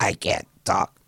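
voiceless, lost-voice delivery. Retelling how a colleague spoke on his way to an awards ceremony: imitating a man who lost his voice. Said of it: "good impersonation".

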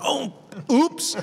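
mock startled, very high, little surprised sound. Recalling his own reaction on seeing the crash in turn two, retelling surprised words. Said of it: "you can hear the surprise in my voice".

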